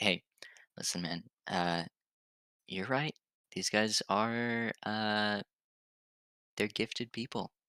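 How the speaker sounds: slow, hushed, murmured half-whisper, close. A player's character with an arm around a general, murmured half-whisper. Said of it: "just kind of whisper to him like".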